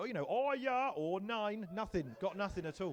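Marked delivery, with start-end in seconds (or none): 0.3-1.7 fake German accent, very slow and loud. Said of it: "I'd learned the accent and everything".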